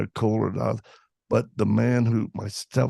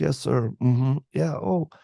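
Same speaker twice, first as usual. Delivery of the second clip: put-on shrunken, small little-kid voice, meek; 3 semitones higher than usual. Retelling a phone call with a stepfather, imitating own small childlike voice. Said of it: "My voice was kinda changing. I was getting smaller".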